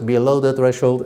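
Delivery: flat monotone robotic computer voice. Describing what a computer says about the data, in a computer voice. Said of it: "with a computer voice".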